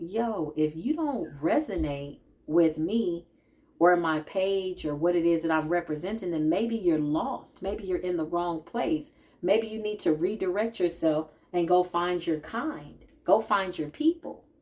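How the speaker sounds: ordinary talk, nothing marked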